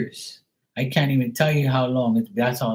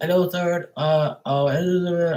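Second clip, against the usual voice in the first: put-on slow, pitched-up Indian accent; 5 semitones higher than usual. Retelling a phone call, imitating an Indian call center agent. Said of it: "Pakistani and fucking Indian guy that comes on the phone and goes".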